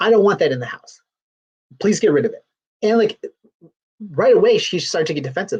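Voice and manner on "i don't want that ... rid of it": tense, upset voice with strained distress. Retelling a husband's demand during a quarrel: imitating an upset husband. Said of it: "He was getting really upset".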